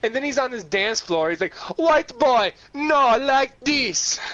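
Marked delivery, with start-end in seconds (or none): 1.8-4.2 raised, put-on Jamaican accent. The speaker retells what a man on the dance floor said: Jamaican accent impression. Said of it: "had this very distinct Jamaican accent".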